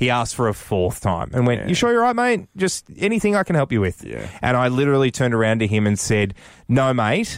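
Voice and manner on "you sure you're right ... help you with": kindly, concerned, empathetic tone, quick and pitched up. Retelling how a guy asked a fourth time if he could help, imitating an empathetic voice. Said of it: "the empathy in his voice".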